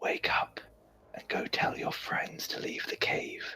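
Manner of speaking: close, hushed, breathy whisper. Player character whispering an instruction to him in the game, whispering. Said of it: "whisper to him".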